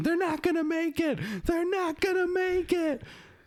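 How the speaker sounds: acted-out yell, very high, repeated twice. Retelling how Doctor Seeker kept yelling during the ride: imitating Doctor Seeker yelling. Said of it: "he was just yelling".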